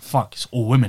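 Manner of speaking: normal talking voice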